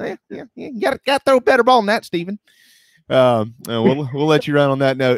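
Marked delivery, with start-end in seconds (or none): 0.7-2.4 squeaky, very high put-on voice. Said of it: "say in the Spurrier voice".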